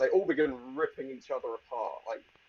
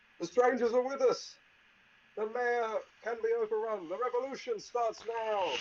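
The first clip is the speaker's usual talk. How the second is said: very high-pitched, rallying yell; 9 semitones higher than usual. Voicing a shady half-elven man who runs out of the tavern: yelling half-elven man. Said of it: "he yells".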